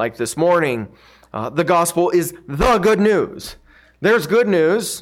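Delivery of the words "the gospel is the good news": the word "the" leaned on with heavy stress. Speaker repeating a line to emphasize one word: stress on the before good. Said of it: "To emphasize the word the again".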